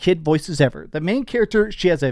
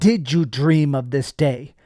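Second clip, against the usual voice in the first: put-on mocking, taunting tone, slower; 2 semitones lower than usual. Quoting a game's tutorial boss as he recognizes the player, imitating a mocking tone. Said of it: "in this very mocking tone".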